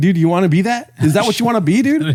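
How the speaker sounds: taunting TV mobster voice. Ranting to another speaker, sounding like The Sopranos. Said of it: "You sound like The Sopranos now".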